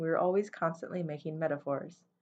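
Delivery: plain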